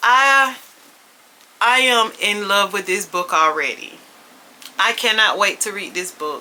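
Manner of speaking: emotional, teary voice fighting off crying. Reacting to a book description, the speaker addresses the audience: holding back tears. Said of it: "I am so trying not to cry".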